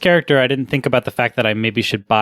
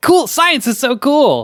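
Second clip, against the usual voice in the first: very high, overeager, gushing science-teacher enthusiasm; 12 semitones higher than usual. Describing a casual tone, the speaker gives a mock-enthusiastic science teacher. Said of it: "like a science teacher who's overly enthusiastic".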